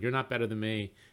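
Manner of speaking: plain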